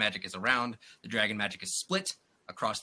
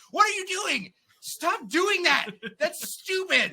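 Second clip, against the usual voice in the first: mock angry, very high-pitched shouting; 4 dB louder than usual. Reviewing a movie, retelling own shouting at the screen in front of family. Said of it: "I was shouting at the screen".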